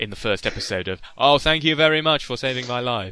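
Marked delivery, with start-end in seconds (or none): 1.2-3.1 put-on heavily sarcastic, teenage-sounding line reading. Retelling a voice actor's line reading from the first episode: imitating a sarcastic reading. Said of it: "that really sarcastic reading he gave".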